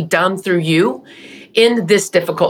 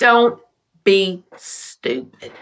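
put-on drawn-out Southern US accent. Quoting her husband Lee's exact words, imitating Lee's slow Southern accent. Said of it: "He had a slow Southern accent".

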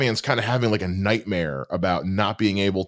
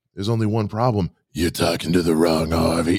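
creepy, sinister put-on character voice; 2 semitones lower than usual. Praising a favorite performance, speaker quotes Bull from Night Court in a creepy voice. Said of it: "It's such a good, creepy voice".

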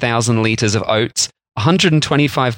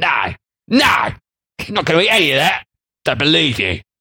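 cross, angry put-on Cockney accent; 4 semitones higher than usual. Voicing someone from this episode, put-on angry Cockney voice. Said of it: "that's my angry voice now".

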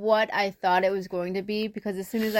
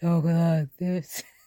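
put-on husky voice, much lower; 4 semitones lower than usual. Speaker describing an actor's Batman voice, imitating a husky voice. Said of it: "He had the husky voice".

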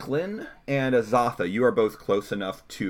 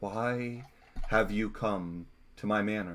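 hushed, half-whispered all the way through; 7 dB quieter than usual. A woman appearing at the table asks her visitors, in a half-whispery voice. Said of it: "in a whispery voice".

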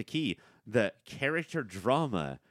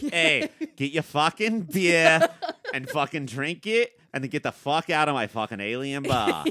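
put-on Boston accent; 5 semitones higher, 5 dB louder than usual. Retelling what a bartender character said, in a Boston accent. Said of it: "like a Boston accent as a bartender".

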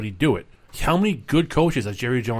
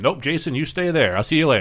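understated, slight put-on Texas accent; 3 semitones higher than usual. Quoting someone telling Jason to stay there, in a slight Texas accent. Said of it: "That was a pretty good accent".

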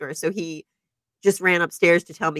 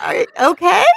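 very high, loud, startled and worried voice. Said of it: "popped his head up the stairs and was like".

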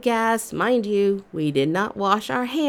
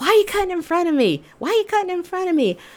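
play-acted, shrill, very high repeated yelling scream; 9 semitones higher than usual. Retelling how people at the salad bar screamed: imitating people screaming. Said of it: "everyone's screaming at me".

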